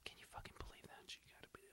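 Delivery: hushed, unvoiced whisper. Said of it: "they were whispering".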